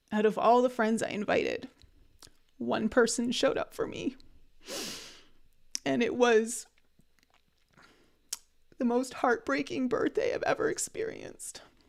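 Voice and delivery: tearful voice, on the verge of crying. Sharing a painful personal story about a birthday: on the verge of crying. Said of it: "See, I'm going to cry".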